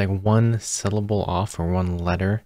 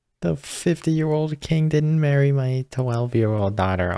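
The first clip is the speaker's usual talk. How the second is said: mock baby-like crying, much higher pitched; 6 semitones higher than usual. Mocking another character's complaint while recapping an episode, mock crying like a baby. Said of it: "just crying like a baby".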